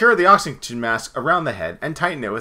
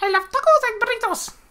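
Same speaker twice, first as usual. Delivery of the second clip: very high, silly hand puppet voice. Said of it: "you make her sound more like a joke".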